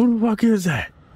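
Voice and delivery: high-pitched, startled yell. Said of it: "I'm yelling at least something".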